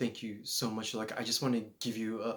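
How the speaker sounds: mock near-tearful voice, about to cry. Retelling how she answered his kind words: imitating someone about to cry. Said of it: "she was literally about to cry".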